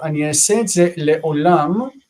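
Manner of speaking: ordinary talk, nothing marked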